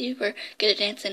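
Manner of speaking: plain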